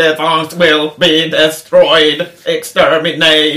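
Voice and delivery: loud, flat, dead-level, rhythmic robotic monotone. Showing how the voice actor does all the Dalek voices, in a Dalek voice. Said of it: "de pratar i monoton röst... liksom på det där viset".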